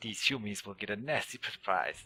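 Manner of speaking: clumsy, badly put-on goblin creature voice. Voicing a goblin sneaking through the grass in a game, goblin voice. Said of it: "my uh, goblin voice is not very good".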